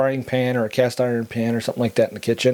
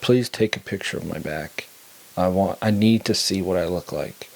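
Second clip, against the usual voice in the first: pleading, begging voice; 4 semitones lower than usual. Retelling a little brother's plea: imitating someone begging. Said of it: "he's begging me".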